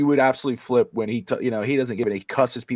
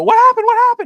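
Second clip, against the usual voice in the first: very high, loud alarmed cry. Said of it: "Tati and my mother-in-law came running and go".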